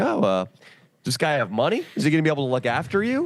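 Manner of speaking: completely sarcastic, high, swooping sing-song delivery. Retelling a question once asked of a volunteer, imitating own sarcastic question. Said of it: "asked her completely sarcastically".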